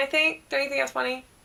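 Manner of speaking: ordinary talk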